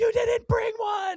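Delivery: shrieking scream, very high and very loud. Describing a TV episode where Phoebe yells at Ross to go, imitating Phoebe screaming. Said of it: "she's screaming at him to go".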